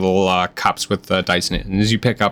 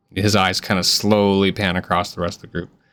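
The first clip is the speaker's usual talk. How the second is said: normal talking voice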